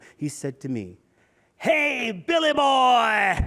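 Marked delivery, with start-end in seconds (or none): 1.6-3.5 put-on very high, raspy, loud shout, boy stretched. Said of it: "in that raspy voice since junior high school".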